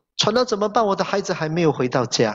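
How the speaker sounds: ordinary talk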